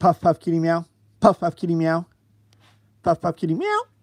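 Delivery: high-pitched voice. Imitating a man on a bus repeating his tic: high-pitched voice. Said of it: "he would do it, like, high pitch".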